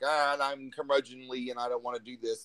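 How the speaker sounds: ordinary delivery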